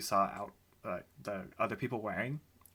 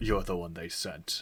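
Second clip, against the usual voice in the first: bull-like monster voice, pitched much lower; 4 semitones lower than usual. Speaking as a Minotaur to those delivering swords, in a Minotaur voice. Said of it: "That's going to be my Minotaur voice".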